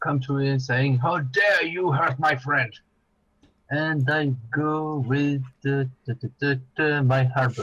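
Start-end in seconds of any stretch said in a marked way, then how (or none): 1.0-2.7 fast, furious, raging outburst. Taking their turn, a character angry at a goblin charges him: raging. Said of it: "so I get raging".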